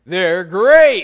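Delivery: very loud, booming, belted cartoon mascot voice. Speaker tells the audience what the tiger on the cereal box says, in Tony the Tiger voice. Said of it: "And that's what Tony the Tiger says".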